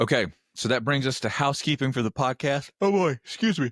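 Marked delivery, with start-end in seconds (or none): 2.8-3.7 pitched-up words spoken mid-yawn. Podcast host, early morning before work, moving to housekeeping: yawning. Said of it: "I'm yawning".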